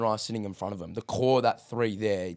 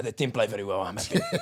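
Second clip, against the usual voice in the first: put-on sarcastic manager voice. Acting out a manager dodging interview questions: imitating Mikel Arteta, sarcastic. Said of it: "doing the whole sarcastic Pep thing".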